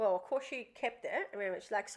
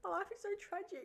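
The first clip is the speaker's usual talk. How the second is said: put-on very high, soft, weepy, full sobbing; 10 semitones higher, 8 dB quieter than usual. Retelling how she answered when asked what's wrong, imitating someone crying. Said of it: "Full crying".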